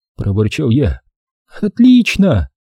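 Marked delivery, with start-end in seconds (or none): 1.6-2.5 genuinely enthusiastic, eager, very high exclamation. Narrator reads a young woman answering the narrator, exclaiming with genuine enthusiasm. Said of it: "воскликнула девушка с неподдельным энтузиазмом".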